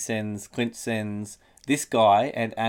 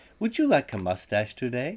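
robot voice with pitch swinging in sing-song swoops. Imagining an elixir answering a man's yell, in a robot voice. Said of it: "a robot voice came back and said".

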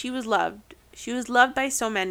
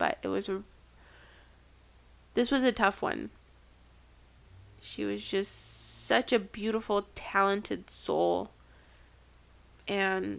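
sad, emotional voice heavy with sadness; 4 dB quieter than usual. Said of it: "if you can tell by my voice".

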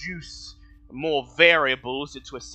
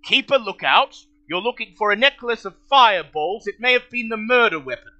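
called out loud and high; 8 semitones higher, 6 dB louder than usual. Voicing Sergeant Cromley ordering a guard: Sergeant Cromley voice. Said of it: "Sergeant Cromley looks around and he frowns".

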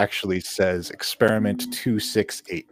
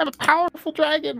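tiny fairy dragon voice, much higher pitch. A dragon trapped in a crate answers a player, in a little fairy dragon voice. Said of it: "there is a little fairy dragon".

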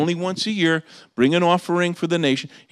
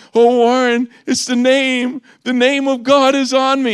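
put-on tearful crying voice, higher and louder; 8 semitones higher, 6 dB louder than usual. Retelling a friend's phone call from Israel, imitating a friend crying. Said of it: "he's never emotional like this".

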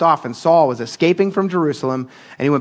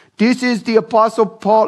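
slow put-on Turkish accent in an announcing delivery; 7 semitones higher than usual. Retelling what a tour guide in Tarsus said, put-on Turkish accent. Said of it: "That's my Turkish accent".

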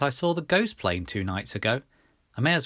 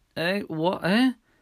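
bleary, half-awake, groggy, pitched-up voice; 8 semitones higher than usual. Shaken awake by someone yelling, the narrator responds: bleary complaint. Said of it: "I complained blearily".

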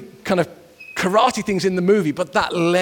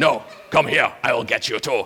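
very low, deep English dubbed-movie voice; 7 semitones lower than usual. Recalling schoolmates copying fight films' English dubbing: English-overdub fight-film voice. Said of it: "try and do the English overdub".

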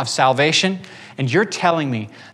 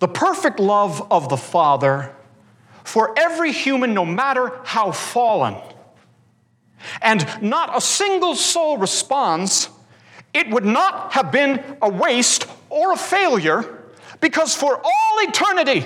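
high yell with wildly swooping pitch; 7 semitones higher than usual. Trying to emulate another man's voice for listeners, yelling in a Jerry Walls voice. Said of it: "yell in my Jerry Walls voice".

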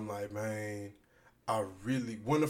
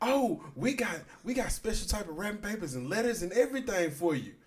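put-on loud excited woman's voice, higher; 9 semitones higher than usual. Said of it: "she done took it to a quick eight".

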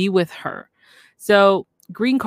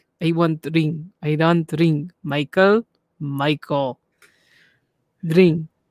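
slow speech without moving the lips; 2 semitones lower than usual. Imitating a woman from a clip who talks without moving lips. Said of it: "she doesn't move her lips".

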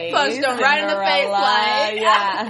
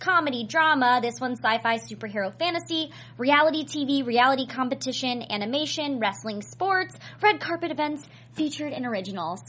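one breath, no pauses, much quieter; 6 dB quieter than usual. Host listing channel genres for viewers, all in one breath. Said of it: "getting all of that out in one breath".

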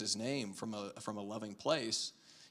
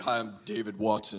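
deep, low preacher voice; 4 dB louder than usual. Imitating a pastor walking up to greet someone: deep pastor voice. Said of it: "he's got this deep pastor voice".

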